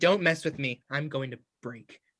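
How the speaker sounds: acted, on-edge, wound-up, agitated, tense voice. Telling a bar joke, voicing terracotta plants in a bar: agitated. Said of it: "they are agitated".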